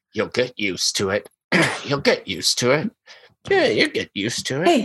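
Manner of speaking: snide, condescending, snotty sneer with swooping pitch. While checking the routers in here, said to the other person, snotty. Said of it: "in kind of like a snotty voice".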